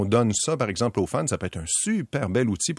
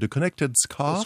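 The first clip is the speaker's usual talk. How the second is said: carefully attempted, put-on English accent; 5 semitones higher than usual. A French speaker trying to say an English product name, English accent. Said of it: "J'ai essayé de le dire avec un accent anglais".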